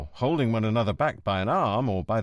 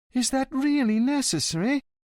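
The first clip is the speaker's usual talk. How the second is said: whiny, very high-pitched voice. A lawyer asks the inspector a question, whiny voice. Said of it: "the lawyer asked in a whiny voice".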